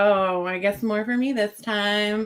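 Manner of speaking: over-the-top, exaggerated camp voice.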